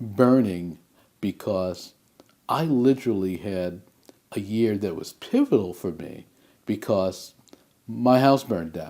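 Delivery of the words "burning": burning set apart and stressed. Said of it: "I want to emphasize the word".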